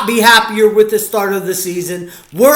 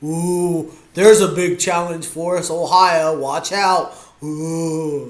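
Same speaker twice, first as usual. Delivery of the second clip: mock-impressed, sarcastic, long drawn-out ooh; 3 semitones lower, 5 dB quieter than usual. Watching the game and joking about next week's opponent: sarcastic. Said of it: "that was me being sarcastic".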